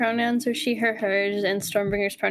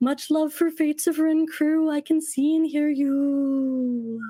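spooky ghost voice, higher pitched; 4 semitones higher than usual. Reading a fan poem aloud as a ghost character: ghost voice. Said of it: "insert ghost voice".

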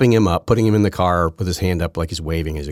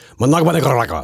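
showy Spanish pronunciation, rolled r in Nicaragua; 6 semitones higher, 3 dB louder than usual. Mocking how news reporters say a place name: imitating news media's Spanish pronunciation. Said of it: "they always like".

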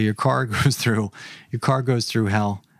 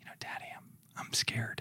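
put-on small, hushed, barely voiced, very soft child's whisper; 18 dB quieter than usual. Retelling what a daughter said at bedtime: imitating a child whispering. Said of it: "she whispers to me".

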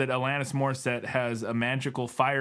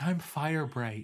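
put-on young girl voice; 4 semitones higher, 3 dB quieter than usual. Joking about a name, acting a girl who grew up on a commune. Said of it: "a girl who's grew up on a commune".

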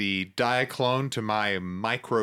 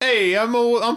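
put-on New Jersey accent, higher, louder; 11 semitones higher, 8 dB louder than usual. Asked to do Dexter Jettster's voice, the speaker tries it in a New Jersey accent. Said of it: "Is the New Jersey accent?".

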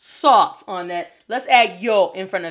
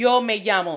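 Spanish accent, llamo pronounced yamo, ll as y. Teaching learners that accents matter, have them repeat after you, demonstrating the spanish accent. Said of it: "And notice how I'm sounding".

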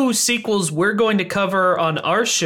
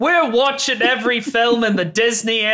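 bad put-on Australian accent, slower; 4 semitones higher than usual. Podcast host opening the show, trying it in a horrible Australian accent. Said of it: "Should I do this in a horrible Australian accent?".

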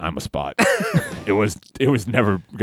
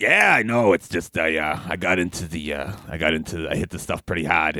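rugged put-on mascot voice, lower; 3 semitones lower than usual. Telling as Spot what went wrong after his video game: rugged Spot voice. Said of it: "you sound awfully rugged".

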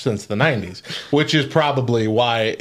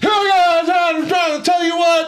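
put-on, shrill, very high wrestling-promo style yelling; 4 dB louder than usual. Imitating a wrestler's trash talk, imitating X-Pac yelling. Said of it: "he yelled everything he said".

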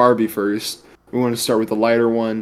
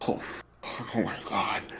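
slow, mock-concerned, stressed whisper; 2 semitones lower, 14 dB quieter than usual. Retelling own reaction when walking away: imitating own stressed reaction. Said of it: "actually stressed, actually concerned".

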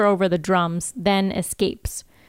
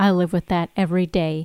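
ordinary talk

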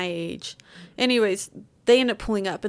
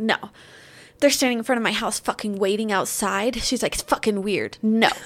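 put-on angry voice; 3 dB louder than usual. Retelling a neighbor refusing a request, imitating someone pissed off. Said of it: "pissed off, like, in a bad mood".

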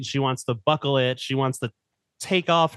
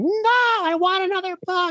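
play-acted very high, drawn-out child's scream. Speaker recalls her getting up at the end of bedtime reading: imitating her screaming. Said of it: "just start screaming".

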